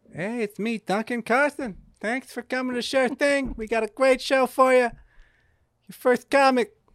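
put-on shrill, blaring voice with a vague Italian accent. Doing a comedy impression of Duncan Carson. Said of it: "He goes".

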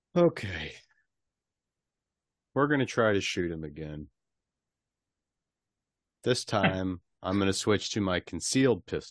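defeated, dejected tone. Player in a tabletop game announcing another attempt to shoot: sounding defeated. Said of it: "You sound so defeated".

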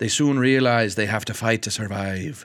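put-on slight pirate-like accent. Reading a movie summary aloud, ending with a little piratey accent. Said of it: "I got a little piratey there at the end".

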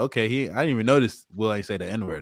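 normal talking voice

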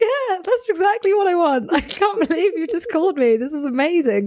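put-on very high, tearful, overjoyed crying voice. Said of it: "I was, like, crying on the phone".

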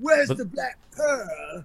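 high, drawn-out movie pirate voice. Mocking a celebrity acting like the pirate from the movie: Captain Jack Sparrow voice. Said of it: "he literally does shit like this. He's like".

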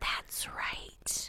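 whispered. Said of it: "He whispers in his ear".

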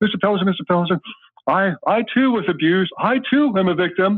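mock overemotional sobbing. Retelling an audience member at a book Q&A, imitating someone overly crying. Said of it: "he's overly crying and overly emotional".

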